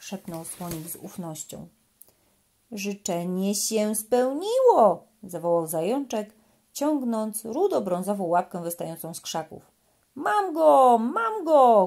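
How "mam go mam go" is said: joyful, very slow, high, drawn-out happy shout. Narrating a children's story, voicing the hare pulling a paw from the bushes: happy shout. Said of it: "krzyczał zadowolony".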